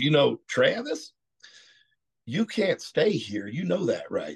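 put-on full, swooping East Texas accent. Retelling what Steve told Travis the next day, imitating Steve's East Texas accent. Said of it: "His East Texas accent".

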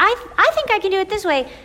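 very high, starry-eyed, naive bride voice. Recalling being a bride, she imitates her past self's voice. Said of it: "I'm making that voice because that's me".

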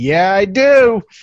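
yelled as loud as possible, high-pitched. Retelling standing up drunk in a packed theater: imitating a loud shout. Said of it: "as loud as I could".

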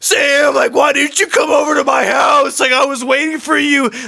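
very loud, very high, passionate, upset shouting. Retelling what a boy said to Sam at the pool next day, imitating an upset friend. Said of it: "He was a lot more passionate this time because he was upset".

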